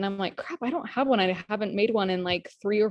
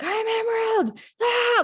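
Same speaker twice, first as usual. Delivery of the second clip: mock, very slow, very high, drawn-out shrieking scream; 4 dB louder than usual. Telling a story about a man behind glass, the speaker acts it out, retelling a scream. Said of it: "I'm just screaming it over and over".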